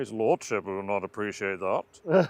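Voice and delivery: put-on booming, deep, very loud old-fashioned dramatic delivery. Teasing another speaker who sounds like someone from Downton Abbey: Downton Abbey character voice. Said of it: "You sound like that one from, um, Downton Abbey".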